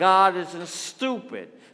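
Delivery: put-on very loud New York accent, mouth stuffed. Showing the congregation how the first rule should be said: new york accent, something stuck in mouth. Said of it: "say it like you got something stuck in your mouth and you're from New York".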